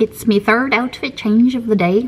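clumsy, bad, put-on Scottish-Irish accent. Speaker narrating a daily routine, in a bad Scottish-Irish accent. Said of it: "That's my attempt at a Scottish-Irish accent".

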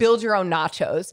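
ordinary delivery

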